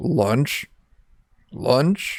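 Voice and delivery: croaking, monster-like frog voice. Game master voices a four-eyed tentacled monster eyeing the players: croaking voice. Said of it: "it croaks out the word".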